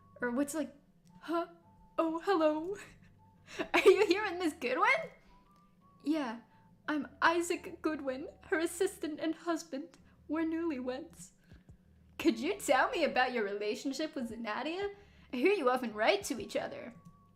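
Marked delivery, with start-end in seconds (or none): 2.0-11.3 mournful victorian voice, higher. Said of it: "a sad Victorian voice".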